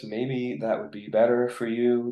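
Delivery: shy, timid, quiet, reserved, held-back voice. Talking about the image a voice gives listeners: shy, reserved, quiet voice. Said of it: "it's a little bit shyer, um, a little bit more maybe reserved, a little bit more quiet".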